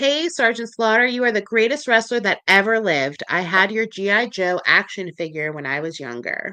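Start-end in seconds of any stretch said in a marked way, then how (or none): none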